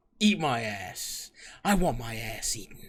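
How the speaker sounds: deep voice with bass, very slow. Showing how to ask a partner for it: with bass in the voice. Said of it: "ask with some fucking bass in your voice".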